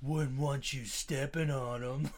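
goofy, silly, stupid put-on cartoon voice. Imitating a character's first voice actor, in a stupid character voice. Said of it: "it's such a stupid voice".

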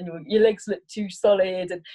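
plain

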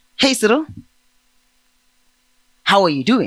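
ordinary delivery

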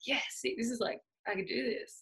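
mock overjoyed, chuffed, excited burst. Retelling getting the phone call, acting out past excitement. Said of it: "I was super excited".

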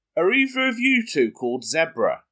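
put-on high voice, calling out across distance. Retelling how a friend called out through the trees: imitating a shout. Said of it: "shouts through the trees".

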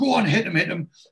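high, rallying, encouraging shout. Retelling a fight scene where a character shouts encouragement: imitating someone shouting. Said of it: "he shouts to Neville".

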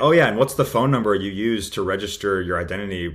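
normal talking voice

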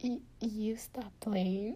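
slow, whispered, nervous stammer. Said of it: "I got really nervous".

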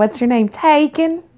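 put-on high, cute little Southern accent. Retelling a girl answering a guy who asks her name, imitating Amanda's Southern accent. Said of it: "Southern accents".

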